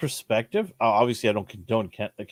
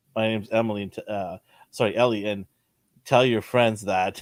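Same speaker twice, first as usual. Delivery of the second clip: ordinary talk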